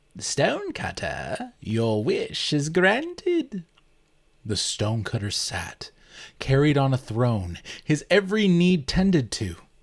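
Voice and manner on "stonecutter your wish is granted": gleeful whisper, much higher, slower. Narrating a story, a spirit's voice speaks into the stonecutter's ear: gleeful whisper. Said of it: "The locals talked of a spirit who granted people their desires, / A voice whispered gleefully into his ear, / A voice whispered gleefully into his ear".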